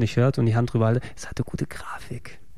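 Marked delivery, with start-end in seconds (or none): 1.2-2.4 hushed, secretive whisper. Answering Gregor, hand over the mic, whispering into the mic. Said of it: "also ich flüstere jetzt ins Mikro".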